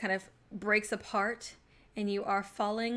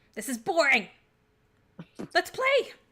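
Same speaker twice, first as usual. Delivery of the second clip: shrill, loud, puffed-out huffing voice; 7 semitones higher, 5 dB louder than usual. A game master voices an unseen speaker heard down the staircase, shrill huffy voice. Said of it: "you also hear kind of a shrill voice just kind of uh, huff".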